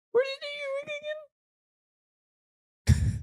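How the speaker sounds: very high, fast, fake interested, caring voice. Showing how you ask another parent a question, in a fake-interested high voice. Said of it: "The high voice, because you really care".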